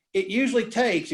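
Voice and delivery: ordinary talk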